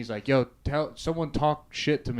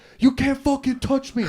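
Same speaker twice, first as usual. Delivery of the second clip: put-on scream, higher and louder; 13 semitones higher, 6 dB louder than usual. Retelling what the speaker screamed in a fight: imitating someone screaming. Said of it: "they said I was just screaming at him".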